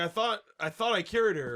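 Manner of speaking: ordinary delivery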